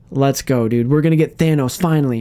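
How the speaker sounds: ordinary delivery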